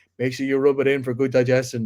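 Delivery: plain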